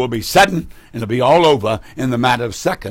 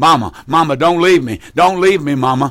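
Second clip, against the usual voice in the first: screamed, pleading voice. Describing a young lady in the yard watching Mama ascend, acting out a scream. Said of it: "she's screaming".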